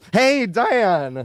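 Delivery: over-eager cracking voice. Greeting Diane, with an excited voice crack. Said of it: "my voice cracked. I got too excited".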